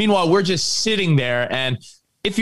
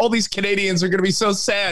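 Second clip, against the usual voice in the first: ordinary talk, nothing marked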